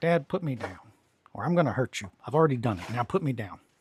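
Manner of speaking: speaking as a cat. Voicing the cat who scratches when picked up: voicing the pet cat. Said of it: "she just goes, she's like".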